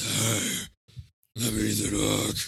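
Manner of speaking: very slow, drawn-out gravelly voice. Mocking how Ethan Hawke sounds in recent movies: gravelly Ethan Hawke impression. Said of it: "you hear Ethan Hawke now, he's just".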